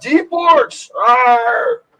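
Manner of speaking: high dwarf voice shouting, arr stretched long. In a tabletop game, the narrator voices a dwarf in a fight with orcs: dwarf shouting out. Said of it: "The dwarf shouts out".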